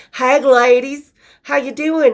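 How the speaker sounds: put-on slow southern drawl. Retelling how the men greeted the women as the bus door opened, imitating a southern drawl. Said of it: "with their southern draws".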